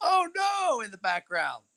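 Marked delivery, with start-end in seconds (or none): 0.0-0.8 high, mock yelling. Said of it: "she's yelling".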